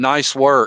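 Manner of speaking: play-acted, insincere, dry sarcastic praise. Recounting a man who shouted at your group, quote his remark sarcastically.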